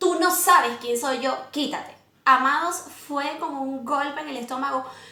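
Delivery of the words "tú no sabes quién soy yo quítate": ordinary talk, nothing marked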